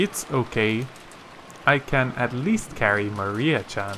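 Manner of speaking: plain reading voice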